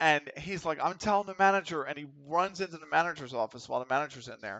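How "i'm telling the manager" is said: high, shrieking, screamed outburst. Retelling how a coworker screams at another: imitating someone screaming. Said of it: "he screams at the guy".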